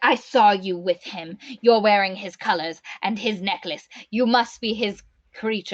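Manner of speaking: put-on snippy, resentful, jealous, angry, pissy tone. Retelling a scene from the book: imitating angry pissy voice. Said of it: "angry and kinda pissy".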